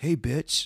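loud, canned, fake prank-call generator voice. Describing a phone generator used to prank call people: imitating a prank phone generator voice. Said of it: "that you could prank call people and be like".

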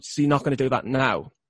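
ordinary delivery

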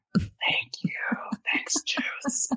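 hushed, close-mic ASMR whisper. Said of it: "Give me some A S M R".

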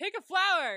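shrill, very high, full-volume shrieking yell. Asking the other speaker to pick a flower after a jump scare: yelling. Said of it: "I'm, like, yelling".

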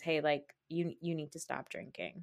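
mock whispering. Retelling how a husband told his wife to stop drinking: imitating a whisper. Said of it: "whispers at her".

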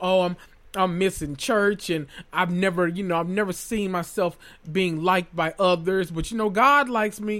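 ordinary talk, nothing marked

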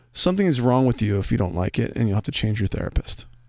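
ordinary talk

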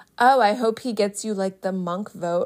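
usual speaking voice

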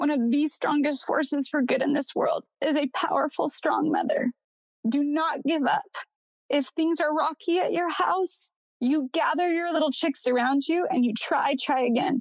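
heartfelt, stirred-up, emotionally moved voice. Speaking to mothers in her audience, getting emotional. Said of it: "now I'm going to get emotional".

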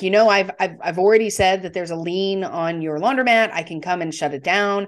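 ordinary talk, nothing marked

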